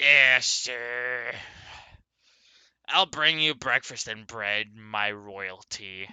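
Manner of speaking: smug character voice. The narrator, as Helga, answers a player's breakfast request; smug Helga line. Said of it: "Kind of smugly says that".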